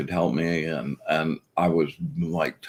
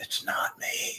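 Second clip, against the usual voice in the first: breathy, very quiet whisper. Retelling what a teacher said into someone's ear: imitating a whisper. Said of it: "kind of whispers in his ear".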